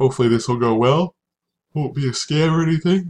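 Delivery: talking through a yawn. Seller tells of shipping items to a buyer, talking while yawning. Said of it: "Sorry for yawning".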